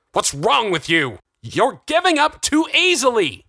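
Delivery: very high, shrill shout, swooping upward. Narrator reading a man arguing with a doctor, shouting back. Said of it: "Jonathan shouted back".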